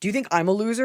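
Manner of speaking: put-on hostile, super aggressive, confrontational, in-your-face tone. Showing a listener how to confront his wife: super aggressive. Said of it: "You get super aggressive and you go".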